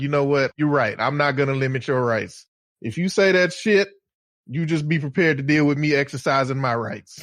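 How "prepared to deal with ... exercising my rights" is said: normal talking voice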